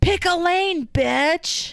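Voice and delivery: very high, very slow, drawn-out yelled scream. Speaker retells a man with a cart screaming at them in a store: imitating someone screaming. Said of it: "then screams at me".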